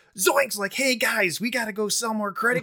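loud, high, over-eager exuberant gushing voice. Speaker recalling a district manager at a bank, imitating an exuberant manager. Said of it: "he just had this exuberance".

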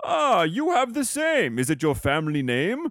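quaint, olden-days speech. Retelling what a man said on looking at the speaker, old-timey speech. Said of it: "they talk old-timey".

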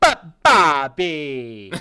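very loud cartoon voice, belted, swinging pitch. Doing the best Linda impression after asking everyone for one: Linda Belcher impression. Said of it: "I wanna hear your best Tina or your best Linda impression".

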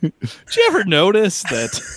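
swooping stand-up comedian delivery. Suggesting observational humor to teach: Jerry Seinfeld impression. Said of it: "kind of like a Seinfeld routine".

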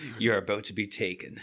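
very quiet, hushed, deep voice, deliberately clumsy and bad. Joking about a movie, doing a worst Liam Neeson impersonation.

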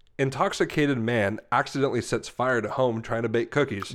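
plain

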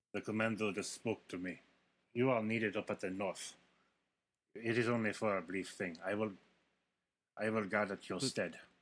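put-on Russian accent. A drow officer appears and orders a guard away from his post: Russian accent. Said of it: "And then a drow officer appears next to him and starts walking down the hallway into the room with the Quaggoths. / He's got a Russian accent".

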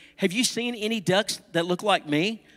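usual speaking voice

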